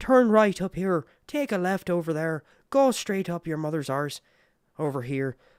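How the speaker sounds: put-on high Irish accent. Imitating the phone giving driving directions: Siri with an Irish accent. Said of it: "my Siri has an Irish accent".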